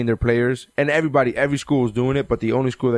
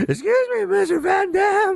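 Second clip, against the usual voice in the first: put-on very high, very slow, squeaky teenage voice. Imagining a 16-year-old kid speaking up: Simpsons squeaky teen voice. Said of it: "the guy from The Simpsons with the squeaky voice".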